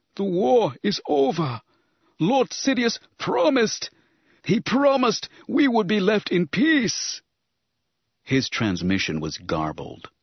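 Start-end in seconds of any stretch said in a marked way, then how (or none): 0.2-7.2 very high, whimpering cry. The trembling viceroy speaks as Darth Vader turns to him, Nute Gunray whimpering. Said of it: "he whimpered".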